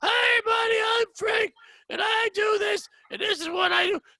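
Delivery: very high, hoarse, raspy cartoonish holler. Retelling how a comic with laryngitis introduced himself: imitating a laryngitis voice. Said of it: "sounds like a fucking cartoon".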